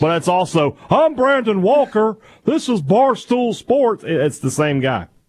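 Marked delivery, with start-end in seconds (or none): 0.9-4.0 much higher put-on Texan cartoon dad voice. Demonstrating an impression while chatting about it with friends, the speaker delivers a scolding line in the voice. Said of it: "my Hank Hill and my Brandon Walker are the same impression".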